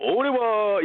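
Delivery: high, grand, dramatic narrator voice. Retelling the voice actor's sudden switch when talking about the dragon: imitating a dramatic narrator. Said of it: "he basically becomes, like, that narrator".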